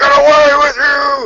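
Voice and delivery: loud, high-pitched yelling. Playing a character chasing off another orc, yelling in Thraxia. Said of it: "and I'm yelling in Thraxia".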